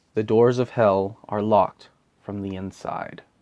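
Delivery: ordinary delivery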